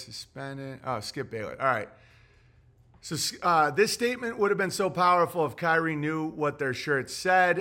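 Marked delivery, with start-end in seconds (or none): none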